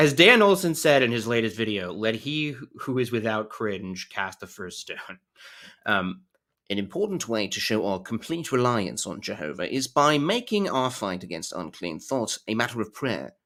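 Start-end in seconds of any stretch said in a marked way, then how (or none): 6.7-13.2 British-accented voice. Reading a passage aloud, going for a British accent. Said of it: "I think I'm just gonna go British".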